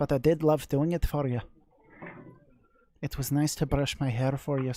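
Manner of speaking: put-on poor, unconvincing Scottish accent. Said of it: "I'm not very good at Scottish".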